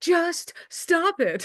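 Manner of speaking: play-acted yell, voice shooting very high. Retelling the sketch's ending: imitating Bob Newhart yelling. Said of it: "he's yelling at the guy".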